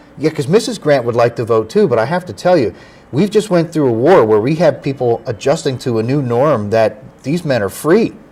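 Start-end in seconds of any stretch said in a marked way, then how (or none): none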